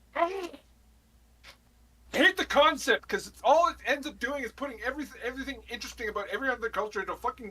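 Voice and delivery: very high-pitched, shrill, furious shouting. Stepping away from the microphone to vent about the concept; yelling. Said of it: "And I'm gonna fucking start yelling".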